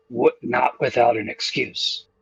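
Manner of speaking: hushed whispering. Retelling a plan conversation, the speaker whispers this part. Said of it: "And I whisper this part".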